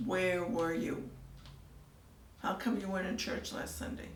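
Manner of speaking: ordinary talk, nothing marked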